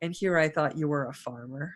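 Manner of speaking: tiny, barely-there, very quiet little voice. Voicing a character who speaks up in the game scene, very quiet little voice. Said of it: "a very quiet little voice that says".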